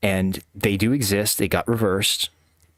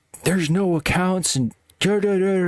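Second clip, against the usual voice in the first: put-on very high, furious, angry screaming; 10 semitones higher than usual. Recounting how the manager screamed at the caller on the phone: retelling an angry scream. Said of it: "he just screamed at me like".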